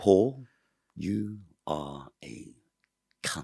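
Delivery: very slow and precise, each word deliberate. Retelling her last words to him, the way she said them: a slow, precise insult. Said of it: "like just like that as well".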